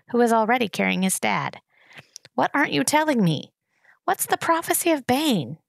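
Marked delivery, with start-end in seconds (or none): 2.3-5.4 insistent, pressing tone, pitched up. Narrator voicing a character pressing another just before departure, insistent. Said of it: "Insisted Gregor".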